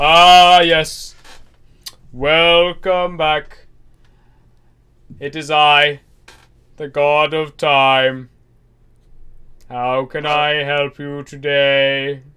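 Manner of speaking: very loud, very slow, booming, grand, drawn-out sphinx voice. Voicing a giant spectral sphinx greeting players who come in: sphinx character voice. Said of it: "just says".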